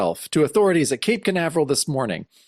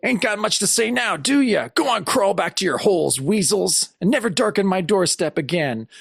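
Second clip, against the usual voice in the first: high-pitched, half-yelled, mildly yelling rant; 5 semitones higher than usual. Recapping a scene as the other guys are escorted out, imitating Jonah yelling. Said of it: "Jonah's yelling like".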